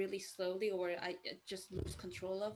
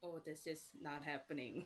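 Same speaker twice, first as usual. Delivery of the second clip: acted deadpan, low, calm, unbothered, flat monotone drone; 4 semitones lower, 7 dB quieter than usual. Imagining a frustrated Discord classmate with internet trouble, voicing him in a calm monotone. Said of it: "calm monotone".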